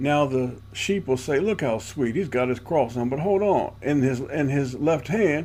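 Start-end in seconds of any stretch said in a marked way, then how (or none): none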